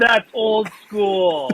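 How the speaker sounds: mock gleeful, excited high voice that can't contain itself. Retelling what a concert-goer kept saying, imitating a happy, excited voice. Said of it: "he was saying it in a happy voice".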